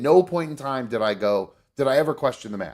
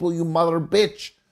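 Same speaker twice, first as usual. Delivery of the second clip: put-on angry little man voice, Indian accent, much higher; 4 semitones higher than usual. Showing the other speaker a trick for laughing at yourself, angry little indian man voice. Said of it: "talk like you're an angry little Indian man".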